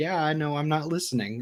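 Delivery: plain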